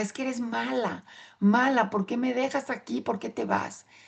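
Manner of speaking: mock small girl crying out loudly. Retelling the words once yelled at the mother as a child: imitating a child yelling. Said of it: "le gritaba".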